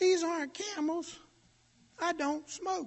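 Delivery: little, tiny, very high squeaky voice. Retelling the reply of the man he held off the ground, in a little squeaky voice. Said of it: "said in a little old squeaky voice".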